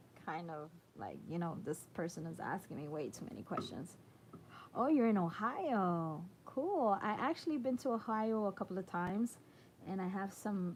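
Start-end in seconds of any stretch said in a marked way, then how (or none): none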